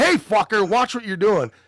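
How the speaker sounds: mock high-pitched yelled shout. Telling how he warned a man shoving through a crowd, retelling a yell. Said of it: "I'm yelling at him like".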